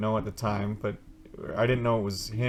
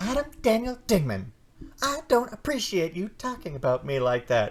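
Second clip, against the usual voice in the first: very high-pitched, animated, swooping delivery; 9 semitones higher than usual. Imitating Shani scolding the speaker: high-pitched voice imitating Shani. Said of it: "My voice is getting really high-pitched!".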